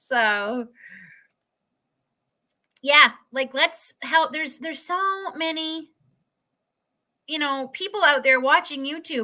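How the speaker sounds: teary, choked-up voice welling with tears. Urging people watching YouTube to help one another, tearing up. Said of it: "So I'm tearing up here".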